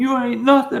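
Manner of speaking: put-on tearful voice. Retelling a low moment alone, berating herself through tears; imitating crying self-talk. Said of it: "And I'm crying, and I'm going".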